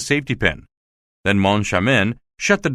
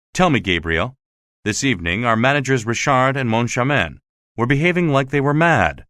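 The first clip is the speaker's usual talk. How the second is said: ordinary delivery, nothing marked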